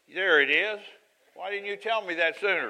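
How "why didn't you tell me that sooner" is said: playful teasing, high-pitched and loud. Looking up a bible reference, the speaker teases the listener who found it. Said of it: "I'm teasing you".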